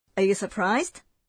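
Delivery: normal talking voice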